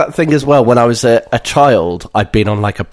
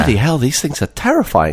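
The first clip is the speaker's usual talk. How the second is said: ordinary talk, nothing marked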